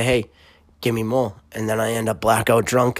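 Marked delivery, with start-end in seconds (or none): none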